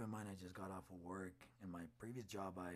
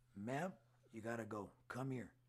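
mock firm, raised voice with no aggression; 3 semitones higher, 5 dB louder than usual. Retelling what they said to a frantic girl: retelling a firm voice. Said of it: "with a firm voice, no aggression".

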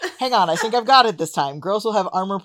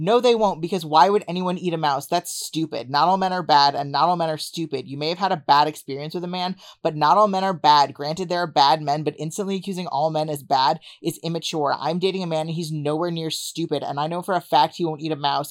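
usual speaking voice

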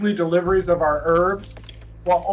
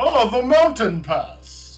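high, put-on old wizard voice; 5 semitones higher, 3 dB louder than usual. During a role-playing scene, a player speaks in Gandalf voice. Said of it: "In my Gandalf voice, I say".

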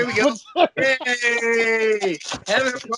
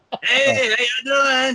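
mock-drunk voice, acting like a drunk idiot. Acting out a maskless guest walking into a party, mock-drunk greeting. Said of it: "sound like a drunk fucking idiot when he walks in the door like you just did".

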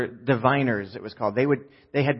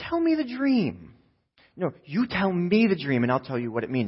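sugar-coated, sing-song, sweetly patient coaxing; 4 semitones higher than usual. Acting out trying to stay calm, saying it one more time with lots of sugar. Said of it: "I'll say it one more time with lots of sugar".

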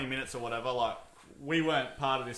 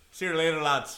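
put-on Irish accent; 2 semitones higher than usual. Taking a turn saying a farewell line, in an Irish accent. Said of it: "you got to say it in an Irish accent".

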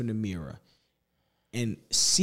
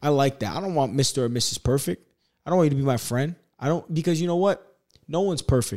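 normal talking voice

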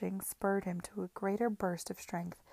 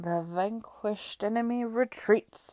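slurred, smeared-together words; 3 dB louder than usual. Narrator voices a man speaking to a despised woman he meets, slurred. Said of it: "he slurred".

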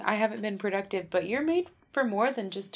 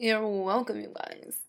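put-on California accent. Putting on a voice to fit in at Silver Lake; California voice. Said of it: "That was my California voice".

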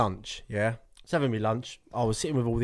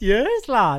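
strongest put-on Welsh accent, very high and very loud; 10 semitones higher, 9 dB louder than usual. Egged on, mimicking a man with a strong accent: imitating a Welsh accent. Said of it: "the most Welsh accent I've ever heard".

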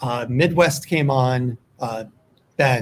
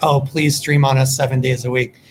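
ordinary delivery

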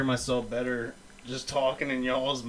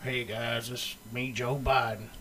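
low, soft, mock southern accent with drawl. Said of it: "Why'd you give him a southern accent".

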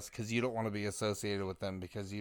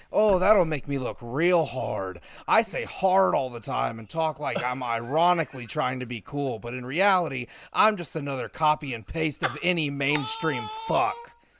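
put-on mocking rant, loud and high; 5 semitones higher, 8 dB louder than usual. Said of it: "I'm gonna do it in my Orton voice".

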